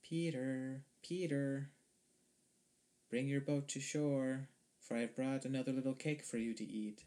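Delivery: small, fine, high voice, called out. Narrator reads Baba Yaga calling from the river shore; Baba Yaga's little new voice. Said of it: "called in her little new voice".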